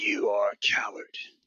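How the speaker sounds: whispered, breathy, ominous minotaur-like creature growl. As narrator, voice an unseen minotaur speaking to a player, in a booming minotaur voice. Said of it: "This booming voice it says".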